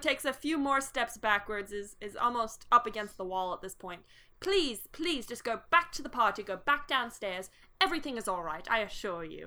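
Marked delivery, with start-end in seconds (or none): 4.4-9.5 anxious, pleading, polite, nervous butler voice. Game master voices the butler as he backs toward the wall: butler character voice. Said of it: "is the butler".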